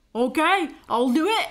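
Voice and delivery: put-on Australian-accented speech. Agreeing to go along with it, in a Hugh Jackman Australian accent. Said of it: "Is that your Australian accent?".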